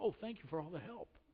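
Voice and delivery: heavily sarcastic, falsely grateful tone. Acting out a sarcastic reply after someone offers an unhelpful remark: imitating a sarcastic reply.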